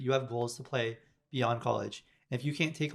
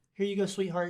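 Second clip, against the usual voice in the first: mock gentle patronizing coddling tone, higher pitch; 6 semitones higher than usual. Talking about coaches, mimicking one who would hold your hand: mock gentle coddling. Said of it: "they're not just gonna hold your hand like".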